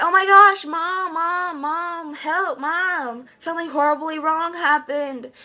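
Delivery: frantic, freaked-out, high, loud screaming. Retelling screaming for her mom to help: retelling a scream for help. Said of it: "I started screaming".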